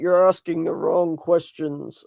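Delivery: grown man's voice. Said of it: "this man voice came out of him".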